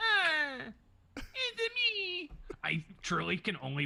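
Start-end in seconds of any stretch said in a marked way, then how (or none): 0.0-2.3 very high-pitched voice with thick, heavy Italian accent. Answering why the character got a heavy Italian accent: Roberto Benigni Italian accent. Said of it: "Roberto Benigni as the Pliers".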